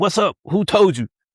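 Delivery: put-on high, screamed, demanding voice. Retelling how a leader screamed at a woman, imitating someone screaming. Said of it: "he screamed at her".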